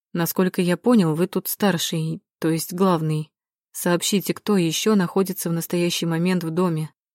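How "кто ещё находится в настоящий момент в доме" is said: plain reading voice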